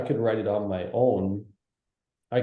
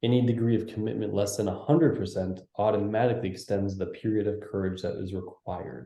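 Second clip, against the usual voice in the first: normal talking voice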